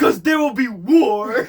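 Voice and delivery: very loud, high yell, "war" stretched. Retelling how another man answered by yelling: imitating someone yelling. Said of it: "just yells".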